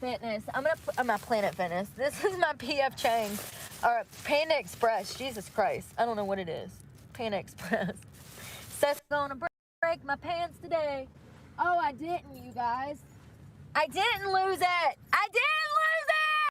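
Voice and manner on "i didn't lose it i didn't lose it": excited yelling, high, drawn-out and swooping. Speaker insists to his friends he didn't lose it: yelling. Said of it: "Stop yelling".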